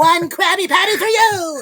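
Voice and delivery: high cartoon voice. Doing voices with the group, SpongeBob voice. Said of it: "That was my best".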